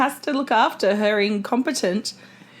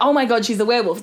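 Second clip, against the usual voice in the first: ordinary talk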